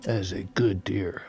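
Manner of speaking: very low, breath-only hushed half-whisper. During a hunt, speaking to Daniel about an approaching deer, half-whispering.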